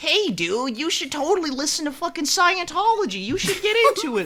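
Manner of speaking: very high, squeaky cartoon boy voice, swooping pitch. Describing voicemail clips of the woman who voices him, the speaker mimics them in Bart voice. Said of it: "In fucking Bart's voice".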